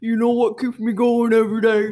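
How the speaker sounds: loud booming put-on motivational-speaker man voice. Teased for a little girl's voice, the speaker tries a motivational speaker, in a put-on man's voice. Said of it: "now you sound like a man that just ate fried chicken".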